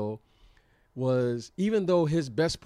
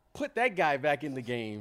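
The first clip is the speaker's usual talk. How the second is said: normal talking voice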